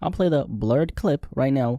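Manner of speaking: blurred stressed in slow speech. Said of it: "emphasis on blurred".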